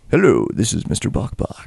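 smooth low put-on chicken voice. Trying out a smooth low voice for Mister Bok Bok. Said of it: "Just smooth down there".

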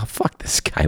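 whispered, soft, under the breath. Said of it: "And we're like".

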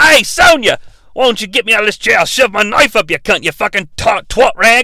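put-on Australian accent. Retelling a scene from an R-rated film, Kano's Australian accent. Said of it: "Kano's, of course, Australian".

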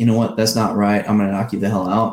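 plain

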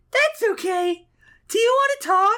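put-on ditzy, airheaded girl voice. Voicing a female comic character replying to Guy Gardner: ditzy girl voice. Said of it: "I'll do the girl voice for her".

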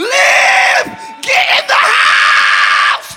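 very slow, high, drawn-out preacher's scream. Picturing oneself as an end time prophet, acting out screaming. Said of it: "I feel like an end time prophet screaming like".

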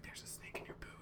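hushed, breathy whisper, close up. Retelling a scene where he sneaks up behind someone, retelling a whisper. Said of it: "and he just whispers".

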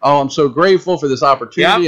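overjoyed, ecstatic, gushing with excitement. Retelling how the next person accepted the offered role: imitating someone excited and ecstatic. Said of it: "excited and ecstatic and".

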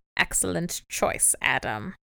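put-on sinister, creepy elderly villain voice. Retelling a scene where a creepy old man approves: imitating a creepy old man. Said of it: "Does he say it like that?".

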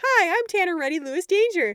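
guileless, wholehearted honest tone. Quoting a funny line from the movie, imitating an earnest delivery. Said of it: "delivers it with such honesty".

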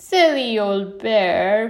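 spoken through laughter. Christopher Robin speaking to Pooh, with a laugh. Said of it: "Christopher Robin said with a laugh".

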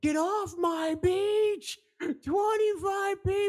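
shrill, high-pitched shrieking scream. Retelling a girl who suddenly screamed at 2 a.m.: imitating a girl screaming. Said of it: "she just starts screaming like".

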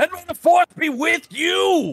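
put-on very high furious yell, "you" drawn out. Reading a comic panel's line aloud: imitating a rage-filled shout. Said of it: "filled with rage".

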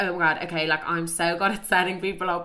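ordinary delivery

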